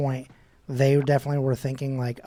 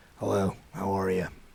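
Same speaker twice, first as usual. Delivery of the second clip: low, gruff, tough-sounding voice; 6 semitones lower, 5 dB quieter than usual. Imitating how Mark normally talks: imitating Mark's gruff tough voice. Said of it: "He's normally gruff and tough. He's normally like".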